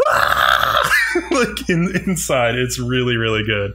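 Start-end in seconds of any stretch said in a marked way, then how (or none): 0.1-0.9 low, airless, breathless mock scream. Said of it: "Aguri's scream is so good".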